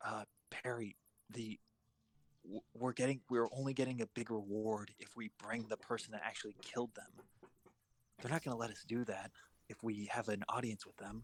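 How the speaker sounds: hushed stage whisper. Warning a companion in character about the reward, half-whispering. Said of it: "whispering back to her is like".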